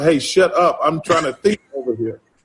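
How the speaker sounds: usual speaking voice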